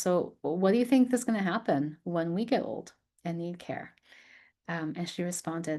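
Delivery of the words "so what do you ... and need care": normal talking voice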